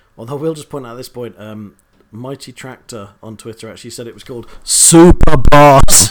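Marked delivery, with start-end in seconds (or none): 4.6-6.1 very loud all-caps joking bellow. Reading out a name someone wrote on Twitter: loud joking shout. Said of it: "I don't know if that went a bit loud there".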